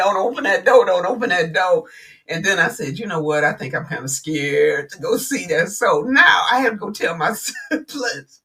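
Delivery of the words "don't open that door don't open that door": normal talking voice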